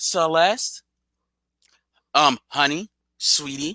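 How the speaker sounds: slow, syrupy, put-on fake-sweet voice. Acting out what they would have told a panel guest: fake nice voice. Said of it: "in a nice voice".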